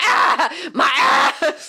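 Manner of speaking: put-on shrill, loud anime-girl screech of pain. Describing an anime scene, the speaker acts out a girl's cry, imitating a screeching girl. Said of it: "just screeching and going".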